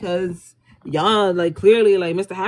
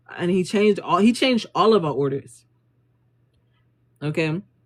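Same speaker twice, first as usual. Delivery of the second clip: normal talking voice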